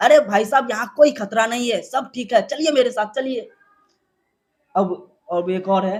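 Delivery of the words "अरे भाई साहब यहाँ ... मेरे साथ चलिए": put-on cartoon character voice. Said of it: "और बट्टू बोलता है".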